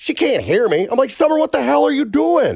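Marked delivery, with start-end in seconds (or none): 1.1-2.6 high-pitched yelling. Parent retells yelling at the phone at their daughter, retelling own yell at phone. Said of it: "I'm yelling at the phone".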